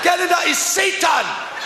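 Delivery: put-on frenzied screaming.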